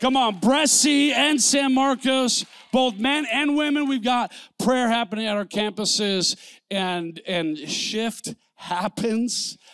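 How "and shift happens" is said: very slow, every word carefully enunciated. Speaker announcing prayer at the campuses, slowing way down on this phrase. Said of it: "I slowed way down for that one".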